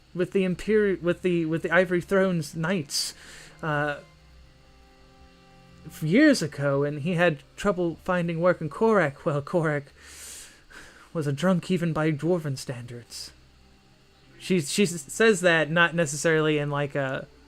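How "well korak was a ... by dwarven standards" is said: pitying, sympathetic, sorry-sounding tone. Speaker voicing a character's remark in a story, pitying tone. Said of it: "It's more like like pitiful".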